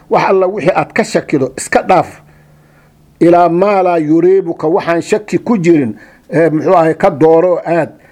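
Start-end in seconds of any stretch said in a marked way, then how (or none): none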